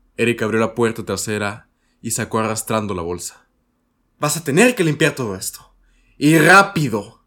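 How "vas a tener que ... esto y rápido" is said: loud, high-pitched shout. A mother speaks to her son as he drags out the torn trash bag, shouting. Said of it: "le gritó su madre".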